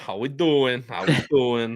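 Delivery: New Jersey accent coming out. Guest greeting the hosts after his introduction, new jersey accent coming out. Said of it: "There's the [name] accent coming out".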